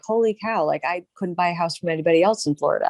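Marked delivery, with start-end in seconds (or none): none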